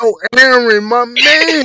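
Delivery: play-acted loud, drawn-out hollering yell. Retelling yelling at the tv screen: imitating own yelling. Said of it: "I'm yelling at my T V screen like".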